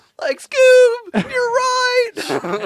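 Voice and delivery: very high, very loud cartoon voice. Answering a friend's Scooby-Doo bit: Shaggy voice. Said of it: "I'm Scooby, you're Shaggy".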